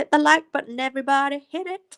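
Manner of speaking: loud, high-pitched fake American accent. Wrapping up a video for viewers, in a put-on american accent. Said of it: "Do you like my American accent?".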